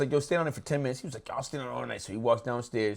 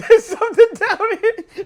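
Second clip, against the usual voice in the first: imitated scream, higher and louder; 15 dB louder than usual.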